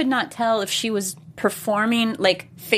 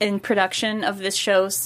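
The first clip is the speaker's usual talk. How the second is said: plain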